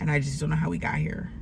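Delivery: ordinary delivery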